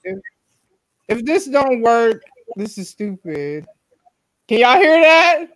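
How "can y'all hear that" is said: all-out, high-pitched screaming. Asking the others if they can hear the shared video: screaming. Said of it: "Why you screaming?".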